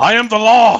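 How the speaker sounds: very high, loud yell. Using the I Am the Law move, asked to shout it: shouting a catchphrase. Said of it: "I'm just gonna ask that you have to shout".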